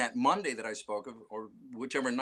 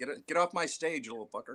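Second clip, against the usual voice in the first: put-on old-timer, old man voice; 3 semitones higher than usual. Joking that the other speaker sounds like an old man: put-on old man voice. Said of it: "you sound like an old man".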